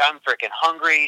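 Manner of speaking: ordinary talk, nothing marked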